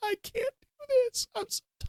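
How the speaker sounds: put-on very high, bawling sobs like a small child. Retelling talking to your dad while in great pain: imitating bawling like a toddler. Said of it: "bawling like a four-year-old baby".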